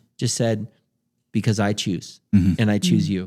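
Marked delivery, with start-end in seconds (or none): 1.4-3.3 put-on loving but stern man's voice, lower. Retelling what the Lord said, imitating a loving but stern father. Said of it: "lovingly, but very ster-, kinda like a stern father".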